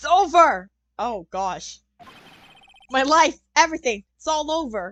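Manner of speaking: loud, anguished, despairing screaming lament. Voicing an attorney's client who thinks it's all over, screaming in despair. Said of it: "Is that your client screaming over there?".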